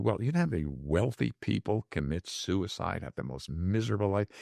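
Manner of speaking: plain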